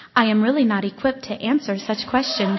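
sweet electronic woman voice. Speaker retelling a phone assistant interrupting a discussion with girls, Siri voice. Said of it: "this electronic, sweet voice of a woman says".

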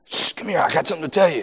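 fake whisper that isn't quiet. Imitating little kids who whisper but not quietly: imitating kids' loud fake whisper. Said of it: "them little kids that they're whispering, but they ain't".

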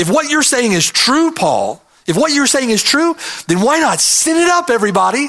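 high-pitched, sarcastic, mocking tone. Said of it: "Do you hear the sarcasm".

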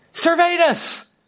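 high-pitched mock scream, shrieked up high.

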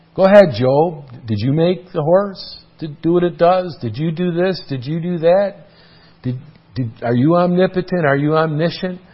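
pointed, challenging, sarcastic tone. Retelling how God questioned Job: imitating God speaking sarcastically. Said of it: "God sarcastically spoke to Job in this way".

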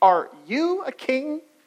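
you hit hard with strong stress. Quoting the question put to Jesus, with stress on you. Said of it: "the emphasis would have been on the word you".

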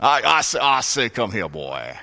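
exaggerated Southern drawl. Describing being an aristocratic Southerner, doing a Foghorn Leghorn voice. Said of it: "But I am like Foghorn Leghorn".

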